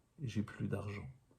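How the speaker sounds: usual speaking voice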